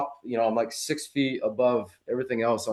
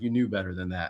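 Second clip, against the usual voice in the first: put-on angry voice, lower and quieter; 4 semitones lower, 5 dB quieter than usual. Retelling what Hummingbird said on reaching the bottom: imitating an angry Hummingbird. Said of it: "she was so mad at me".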